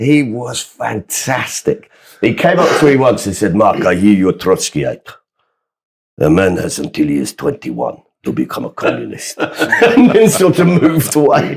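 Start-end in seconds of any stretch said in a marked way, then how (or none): 3.5-9.4 put-on Yorkshire accent with a Greek flavour mixed in. Retelling what a man once said to the speaker, in a yorkshire greek accent. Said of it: "this incredible sort of Yorkshire Greek accent".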